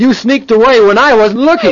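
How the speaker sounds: high-pitched, angry yelling. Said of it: "You're yelling at me".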